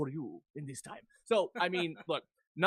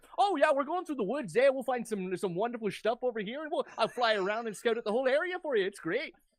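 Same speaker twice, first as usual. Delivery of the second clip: exaggerated Canadian accent, pitched up; 7 semitones higher, 3 dB louder than usual. Retelling a raven character one of them brought in; stereotypical Canadian accent. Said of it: "had like a stereotypically Canadian accent".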